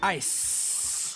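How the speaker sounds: ice elongated, long stretched final syllable. Imitating how he said the line's last word, drawn-out 'ice'. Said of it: "Why did he elongate the last syllable hit there? ... He said it like that".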